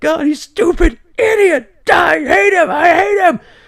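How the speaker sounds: very high sobbing outburst. Retelling bursting into tears in front of parents, retelling a crying outburst. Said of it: "I burst into tears".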